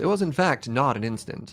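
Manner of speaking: broadcast-style announcer narration voice. Speaker breaking into their own game commentary in an announcer voice. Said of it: "Announcer's voice".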